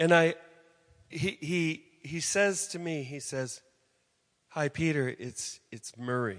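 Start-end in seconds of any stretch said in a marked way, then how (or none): 4.5-6.4 put-on depressed, hopeless voice. Retelling a phone call from Murray: imitating Murray's depressed voice. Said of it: "Just the voice of depression".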